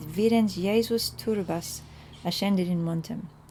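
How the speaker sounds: plain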